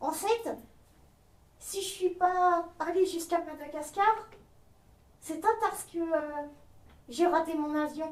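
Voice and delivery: very quiet, hushed, high, chatty little puppet voice. A puppet speaks, in a puppet voice. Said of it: "sa marionnette [name] (très bavarde et attachante !)".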